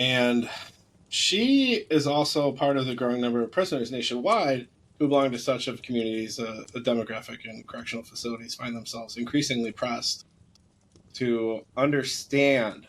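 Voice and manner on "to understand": "understand" stressed, slow and drawn out. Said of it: "I want to stress that word".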